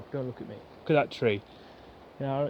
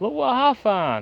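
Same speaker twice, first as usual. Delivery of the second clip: put-on high, loud, slow excited child voice. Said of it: "My, my son fetched it out".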